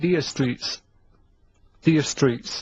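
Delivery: put-on Jamaican accent and pronunciation. Showing the others how the band name should sound, Jamaican accent. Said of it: "make it sound like that".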